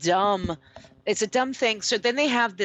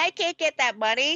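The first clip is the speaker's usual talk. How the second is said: mock scream, much higher; 6 semitones higher than usual. Mocking a man who owes $300, imitating him screaming. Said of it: "he's screaming like".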